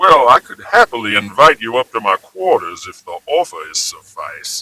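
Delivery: put-on swooping, old-fashioned Deep South society accent. Mock an actress playing a super rich Dallas socialite, imitating Julia Roberts' Deep South accent. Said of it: "where that accent originated".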